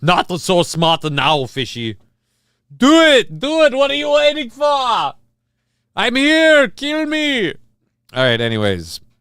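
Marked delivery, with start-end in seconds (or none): 0.0-7.5 very high, loud, slow, deliberate yell. Repeating a quoted line, turning into Arnold Schwarzenegger voice. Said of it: "now I'm turning into Arnold Schwarzenegger".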